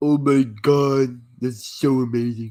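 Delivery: put-on starstruck gushing with drawn-out god. Mocking a film scene's choking move with another speaker: put-on mock-excited voice. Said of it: "you do that voice so fucking well".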